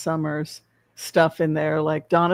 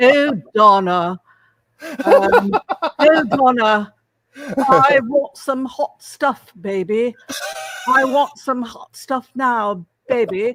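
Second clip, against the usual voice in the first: put-on posh British accent, pitched a touch higher; 7 semitones higher, 4 dB louder than usual. Describing a man's performance, the speaker quotes him in a posh British Prince Charles impression. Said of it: "Posh British".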